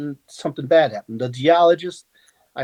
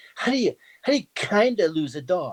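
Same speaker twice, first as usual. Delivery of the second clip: put-on woman's voice; 4 semitones higher than usual. Retelling what a woman said to him, trying her voice: imitating a woman's voice. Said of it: "let me try to do the voice".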